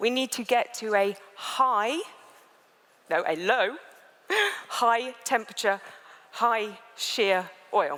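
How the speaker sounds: very slow, careful, drawn-out, each word set apart. Warning that the sentence is complicated, the speaker says it very slowly. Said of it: "I'm going to have to say this very slowly".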